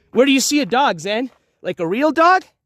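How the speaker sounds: voice calling across distance. Speaker asking Zen a question while looking for a dog, yelling. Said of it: "I'm yelling".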